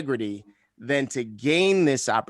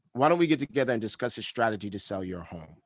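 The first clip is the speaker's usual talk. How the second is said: pitch falls at the end on home; 2 semitones lower, 3 dB quieter than usual. Showing how ending everything with a downswing sounds: falling pitch at end of question. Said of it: "everything that I say has a downswing on the end".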